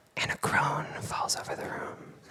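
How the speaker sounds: hushed voice. Describing his early video work, adding a line in a quiet voice. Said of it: "[Quiet Voice]".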